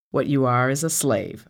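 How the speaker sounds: cold, icy, firm and steady delivery. Reading Afi answering her question, cold and firm. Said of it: "her voice cold and firm".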